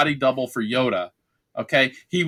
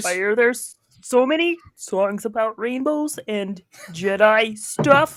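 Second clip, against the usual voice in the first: puppet frog character voice; 8 semitones higher than usual. Imagining Yoda voiced as a Muppet: Kermit the Frog voice. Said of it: "Kermit's voice?".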